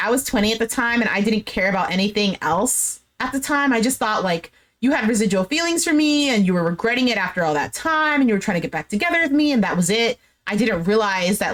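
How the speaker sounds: ordinary delivery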